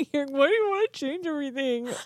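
giggling through words. Quoting the other speaker back while unable to stop: laughing while talking. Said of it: "I keep laughing".

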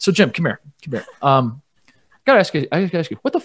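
acted calm incredulity, not angry at all. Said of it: "that was his attitude".

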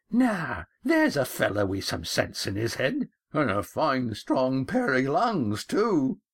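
creaking, rickety, creaky voice. Narrator reading a remark after the skipper roars, in Old Pig's creaky voice. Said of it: "Old Pig's creaky voice".

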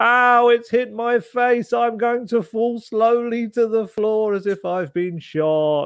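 very high, slow, theatrical mock whimpering cry.

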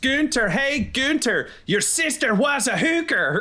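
very high, full-volume, shrill taunting shout. Taunting an enemy guard through a door: yelling at the top of lungs. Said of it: "I just wanna yell at the top of my lungs".

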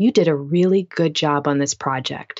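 mock-serious deadpan, straight-faced serious tone. Recalling a high school physics teacher's compliment, retelling it in a serious deadpan tone. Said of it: "super straight face, serious tone".

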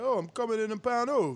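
put-on speaking with an Italian accent. A host acts out Tank stunting for the camera: Tank with Italian accent. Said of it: "why you made him sound Italian?".

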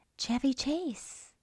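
hushed, breathy whisper under the breath. Talking with another speaker, someone names a former cast member, whispering. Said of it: "and I'm whispering".

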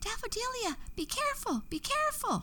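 very high, shrill, alarmed shouting. A narrator reads the flowers and butterflies calling after a girl entering a witch's garden, shouted. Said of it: "the flowers and the butterflies shouted".

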